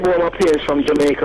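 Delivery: plain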